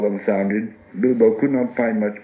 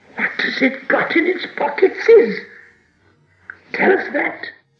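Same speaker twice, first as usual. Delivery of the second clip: sharp, high-pitched hissing; 4 dB louder than usual. Narrating Gollum's question to Bilbo out of the gloom: sharp hissing. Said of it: "out of the gloom came a sharp tss".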